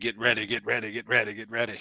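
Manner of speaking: preacher-style repeated calling delivery. Quoting to someone how he says it, do a T.D. Jakes impression. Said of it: "As T D J say ... That's how he say it too".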